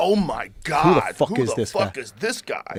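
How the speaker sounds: put-on, slow, shocked and amazed exclamation. Imagining everybody reacting to the artist: imitating amazed people. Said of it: "Everybody'd be like".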